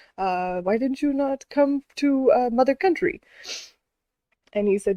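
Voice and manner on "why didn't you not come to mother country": fake German officer accent, higher, slower. Retelling a german officer questioning an american soldier, in a weird german accent. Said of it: "This is a weird accent".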